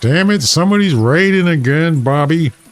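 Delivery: high-pitched cartoon voice. Speaker suggests stream alerts done in cartoon voices: King of the Hill impression. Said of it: "Or King of the Hill guy".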